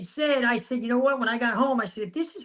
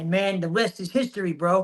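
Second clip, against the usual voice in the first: ordinary talk, nothing marked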